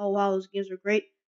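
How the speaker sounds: ordinary delivery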